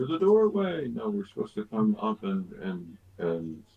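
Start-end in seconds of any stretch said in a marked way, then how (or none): 0.0-0.9 very high, loud scream. Calling out to everyone in the party in character: screaming. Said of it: "I scream to everyone".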